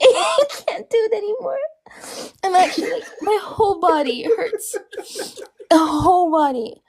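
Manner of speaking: helpless laugh-sobbing, crying with laughter through the words. Telling the live viewers about being in pain: laughing hard while talking. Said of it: "but I'm crying".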